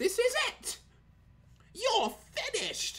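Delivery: high, swooping, heavily exaggerated English accent. Speaker mocking over-English game voice acting, doing an over-English Cammy voice. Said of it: "They sound over English".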